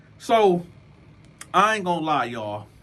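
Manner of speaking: normal talking voice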